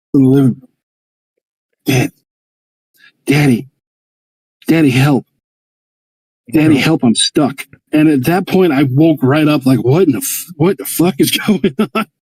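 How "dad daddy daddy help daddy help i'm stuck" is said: tiny, small-sounding put-on voice. Woken at four in the morning by a voice from the living room, tiny voice calling daddy. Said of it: "I hear this tiny voice".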